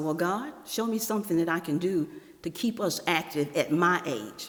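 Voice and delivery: ordinary talk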